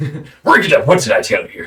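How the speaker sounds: put-on Irish accent. Voicing Grob breaking up a fist fight: Irish accent. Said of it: "bit of an Irish accent".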